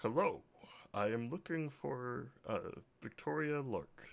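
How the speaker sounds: gruff, heavy cat-man character voice. Narrating a scene, the speaker voices a cat character looking for someone: deep gruff voice. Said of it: "deep gruff voice goes".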